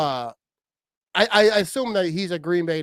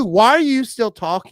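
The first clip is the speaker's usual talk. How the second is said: ordinary talk, nothing marked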